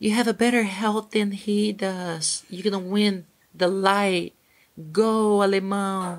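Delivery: acted small, high screaming voice. Retelling what a teacher shouted at a fight: imitating Mario Hayes screaming in a little voice. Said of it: "Mario Hayes was screaming with a little voice".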